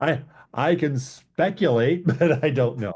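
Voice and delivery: speaking through laughter. Answering a question about approval timing, laughing while talking. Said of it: "Sorry, I'm laughing".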